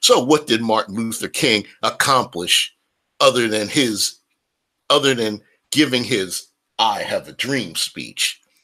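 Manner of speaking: normal talking voice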